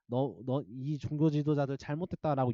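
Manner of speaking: normal talking voice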